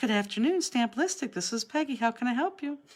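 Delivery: sugary, sweet, high receptionist voice. Describing her answering calls, the speaker imitates Peggy's sweet phone greeting. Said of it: "she was saying".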